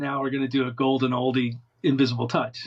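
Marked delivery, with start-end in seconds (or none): none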